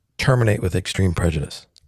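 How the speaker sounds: ordinary delivery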